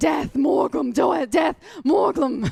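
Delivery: unhinged, wild raving madman voice. Voicing a possessed prisoner being escorted to jail: raving like a madman. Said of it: "in the ravings of a madman".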